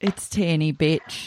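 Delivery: slight, loose Australian accent. Speaker repeating a catchphrase with their own name: kind of Australian accent. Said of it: "that was kind of Australian".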